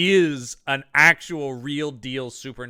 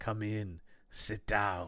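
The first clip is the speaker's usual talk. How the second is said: low, slow, quiet, hushed bad-guy voice; 5 semitones lower, 13 dB quieter than usual. Imitating an actor's villain character inviting the detective in: Bruce Payne's bad guy voice. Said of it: "bad guy voice and everything about it".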